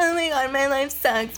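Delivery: put-on high, whiny teen voice full of angst.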